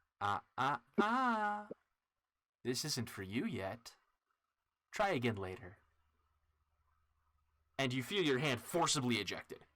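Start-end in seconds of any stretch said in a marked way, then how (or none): 0.2-5.8 clear, deliberate, slow, distinct inner voice. Describing a hand pushed back, the speaker voices what the inner voice says: distinct voice in your head. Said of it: "you hear a very distinct voice in your head go".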